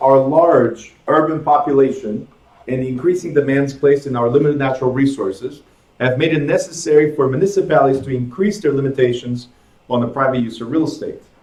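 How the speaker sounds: ordinary delivery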